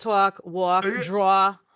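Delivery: New Jersey accent on every word. Admitting to a New Jersey accent and showing it on sample words: New Jersey accent. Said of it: "I do have a New Jersey accent".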